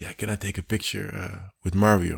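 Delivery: imitated whisper. Retelling how a woman leaned in close to ask something, retelling a whispered question. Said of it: "Dus ze fluisterde van".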